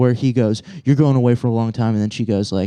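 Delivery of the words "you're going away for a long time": play-acted stern, hard, threatening tough-cop voice. Retelling how a man played bad cop on the speaker, imitating bad cop. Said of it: "they start doing good cop, bad cop".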